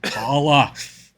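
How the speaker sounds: "tala" said with a British accent. Discussing a character's name, giving it a better british accent: british accent on "tala". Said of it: "a way better British accent on it".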